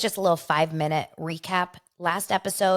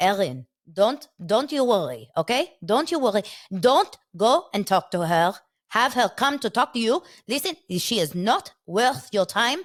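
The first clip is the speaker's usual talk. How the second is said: put-on speaking with an Israeli accent; 2 semitones higher than usual. Retelling how a girl's dad talks to Aaron, in an Israeli accent. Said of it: "with this Israeli accent".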